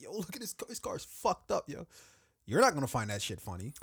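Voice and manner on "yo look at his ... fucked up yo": giggling through the words, very high voice. Imitating a bystander filming a car crash: imitating someone laughing while talking.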